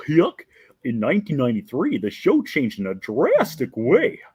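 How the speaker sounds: cartoon dog voice with wide pitch swings. Speaker reads a passage aloud to try out a voice: Goofy voice. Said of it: "try to do it in Goofy's voice".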